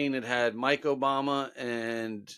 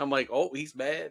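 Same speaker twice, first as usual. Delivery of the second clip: ordinary talk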